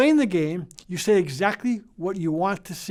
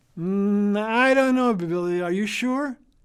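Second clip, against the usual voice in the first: slow, mischievous, playful teasing with feigned uncertainty. Showing parents how to challenge a child: playful pretend doubt. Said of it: "And you say again".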